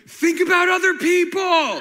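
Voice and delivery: very loud, high, slow, drawn-out shrill yell. Retelling how a half-awake wife yelled in bed: imitating someone yelling. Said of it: "And she started yelling at me".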